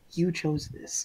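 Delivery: gentle whisper. Leaning in to Sable before leaving the group, a character speaks: gentle whisper. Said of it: "just whisper so so gently".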